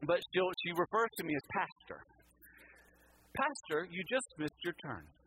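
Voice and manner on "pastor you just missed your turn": mock snide, sarcastic, swooping sat-nav announcer voice. Retelling what the phone says after a missed turn: imitating sarcastic phone voice. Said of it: "I don't know if she's being sarcastic".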